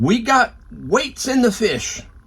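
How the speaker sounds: high-pitched, slow, mock official-sounding shout.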